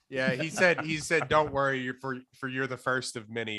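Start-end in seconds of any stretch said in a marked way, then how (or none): none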